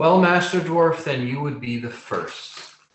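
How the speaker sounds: dripping, heavy sarcasm. Voicing the tax collector answering a dwarf: extremely sarcastic. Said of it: "he says, extremely sarcastically".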